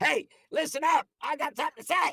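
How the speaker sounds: piercing, very high, cutting-through call. Speaker showing how to cut through every now and then, in a cutting-through voice. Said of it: "maybe you want to cut through".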